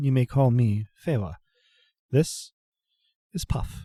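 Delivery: gentle, formal, courteous manner. Voicing a traveling merchant offering wares: soft formal voice. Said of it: "speaks with a soft formality".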